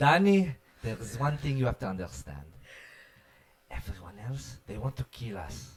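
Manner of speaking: put-on Israeli accent. Debuting his dad's Israeli accent on the show for the listeners. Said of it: "I'll do my dad's Israeli accent for you guys".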